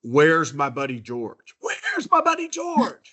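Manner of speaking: full-throated, high, swooping yell, rising in pitch. Retelling a guest walking into a restaurant: imitating a man screaming. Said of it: "he screams at the top of his lungs".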